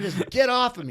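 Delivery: loud high yelling. Recounting being pinned down after a crash, the speaker retells a yell. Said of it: "I'm like yelling at him".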